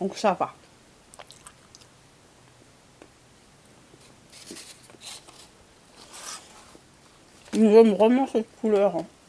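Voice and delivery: speaking while eating, mouth full. Greeting viewers while eating chocolate, talking with mouth full. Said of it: "je me parle la bouche pleine".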